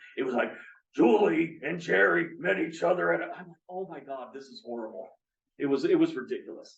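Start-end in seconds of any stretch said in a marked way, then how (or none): 1.0-3.1 rough, croaky, frog-throated voice. Describing to listeners how a voice sounded; Froggy voice as heavy smoker. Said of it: "imagine Froggy if he was a heavy smoker".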